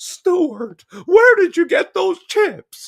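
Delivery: shrill, very high, very loud, swooping weird mom voice. Quoting the odd mom from a film, imitating the mom's weird voice. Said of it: "what voice I was doing for her".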